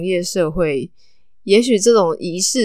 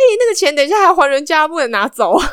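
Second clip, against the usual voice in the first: sudden, very shrill, very high blurted shout; 9 semitones higher, 5 dB louder than usual. Retelling a guy who suddenly shouted during a crowded ceremony, retelling a sudden shout. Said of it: "他就突然大喊一声说".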